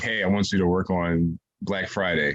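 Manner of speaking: usual speaking voice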